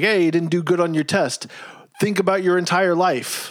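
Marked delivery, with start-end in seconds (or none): none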